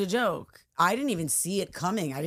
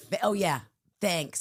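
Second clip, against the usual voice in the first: mock sarcastic tone. Retelling a woman's reply to an apology, imitating a sarcastic thanks. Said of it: "Didn't she give you the sarcastic thanks?".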